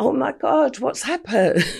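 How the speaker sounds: high, put-on shock and alarm. Retelling standing at the robbery scene as a bystander: imitating put-on shock. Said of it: "standing there with the money in the bag".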